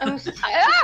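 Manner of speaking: high, loud, startled yelp. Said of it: "I'll stop yelling".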